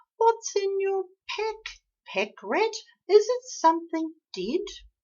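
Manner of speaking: tiny, bold, squeaky high voice. Narrator reads a spider calling down to a rat, in a tiny squeaky voice. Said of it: "a tiny squeaky voice daringly said".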